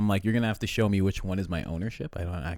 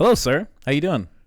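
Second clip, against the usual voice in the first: high, extra-polite, formal voice; 7 semitones higher, 9 dB louder than usual. Retelling how a cop was greeted: imitating super polite interview voice.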